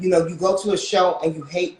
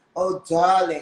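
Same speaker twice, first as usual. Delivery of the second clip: pretentious, affected, put-on la-di-da manner. Mocking people who put on airs: imitating affected airs. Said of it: "put on these airs".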